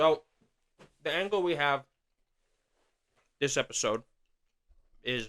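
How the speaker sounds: speaking while chewing, mouth full. Starting to introduce the episode while still eating, talking with mouth full. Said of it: "Hold on, he's chewing".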